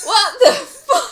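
loud yelling, shouting. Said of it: "I'm yelling!".

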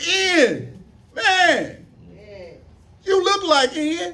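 high, slow, amazed tone. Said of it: "People come up talk to you".

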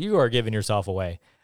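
plain

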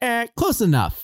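very high, jokey comic voice, tossed off. Retelling a charades scene from Finding Nemo in a Ratzenberger voice. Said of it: "in such a, a Ratzenberger voice".

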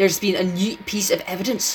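put-on spoken in a Scottish accent. Telling a made-up story, voicing the character Raglan in a Scottish accent. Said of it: "sounds like you'd be Scottish and be like".

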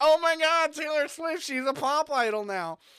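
high, put-on nerdy voice. Voicing everyone's reaction when the 1989 album came out, put-on nerdy voice. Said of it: "that was my nerd voice".

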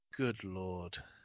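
put-on muttered aside. Retelling a TV moment, imitating Stephen A muttering under his breath. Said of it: "Stephen A says under his breath".

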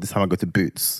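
plain

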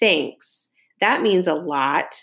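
dry delivery. A brother answering his father's jab, dry. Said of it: "my brother says dryly".

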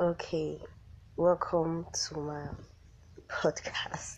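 sick voice fading to a whisper. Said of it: "I'm so sorry my voice is like this. I'm feeling sick".

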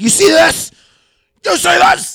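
very loud, very high, angry yelling. Retelling how a woman yelled at the speaker and Milan, retelling an angry yell. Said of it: "She pointed at her own face".

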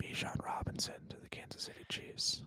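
loud stage whisper. Slipping in a suggestion meant for everyone to hear: loud stage whisper. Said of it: "I'm just gonna whisper that loudly enough for everybody to hear".

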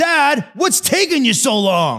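put-on child yelling, high, drawn-out sing-song. Retelling how a child yells when milk takes too long: imitating Trey yelling. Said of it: "he will yell".

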